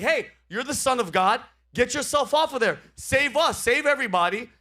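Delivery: high-pitched, jeering, goading, mocking sneer. Retelling a thief on a cross taunting Jesus: imitating a mocking taunt. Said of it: "one of the thieves was mocking Jesus".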